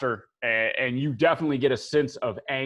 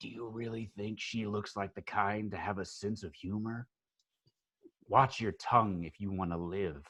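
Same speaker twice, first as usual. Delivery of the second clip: very quiet, low, hushed half-whisper; 4 semitones lower, 10 dB quieter than usual. He looks over his shoulder, leans down and speaks only to you, half-whispering. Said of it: "he leans down and he whispers to you".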